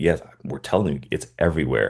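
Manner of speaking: normal talking voice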